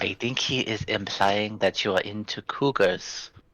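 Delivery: saying quietly. Whispering a remark in character to a tall companion: saying quietly. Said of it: "I'm going to say quietly next to you".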